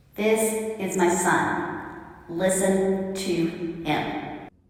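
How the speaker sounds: mock very slow, thunderous, booming voice. Storyteller retelling the mountaintop scene, voicing a big booming voice from the heavens. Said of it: "a big booming voice comes from the heavens".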